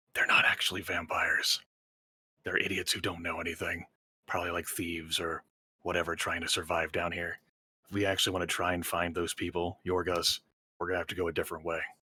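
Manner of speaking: hushed, quiet half-whisper under the breath. Narrating a game scene, a character points and speaks to another character: half-whispering. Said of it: "he whispers and says".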